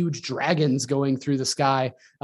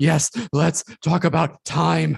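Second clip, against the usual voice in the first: put-on breathless voice; 2 semitones higher than usual. Mocking an actor who delivers lines breathlessly on entering rooms: winded Tom Hiddleston impression. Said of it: "people get really winded when they talk".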